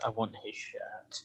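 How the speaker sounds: barely audible whispered mumble under the breath. In a tabletop game, a character walks away toward the inn, muttering. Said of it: "Dante just mutters".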